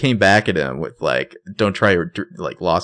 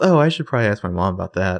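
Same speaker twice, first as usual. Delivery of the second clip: put-on innocent voice with an edge. Imitating Melissa's line from a scene: innocent with just enough edge. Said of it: "She says it so innocently, but with, like, just enough edge".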